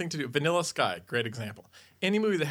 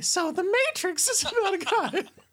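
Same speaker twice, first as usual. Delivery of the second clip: very high-pitched voice, even higher; 3 dB louder than usual. Asked to explain a film in an even higher tone, the speaker begins: high-pitched voice. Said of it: "explain it in an even higher pitched tone".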